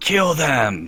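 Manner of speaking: high, full yell. Playing a tabletop game, a player voices their character yelling out. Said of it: "Yells out".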